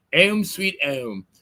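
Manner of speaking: put-on English accent. Retelling what dad said every time they pulled into the driveway: English accent. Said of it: "he would say with an English accent".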